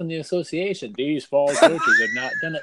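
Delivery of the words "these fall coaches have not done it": very high, shrill, swooping bureaucratic official voice. Reading out an email from the association, in a state association voice. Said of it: "That was a good state association voice".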